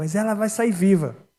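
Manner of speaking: emphatic outburst. Pastor recounts answering a woman who said the patient would not survive, retelling a shout. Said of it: "aí eu dei um grito e falei assim".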